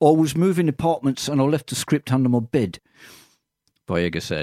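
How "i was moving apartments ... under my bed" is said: poor put-on London accent, pitched up. Quoting an actor's words about losing the script: bad london accent. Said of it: "In that accent?".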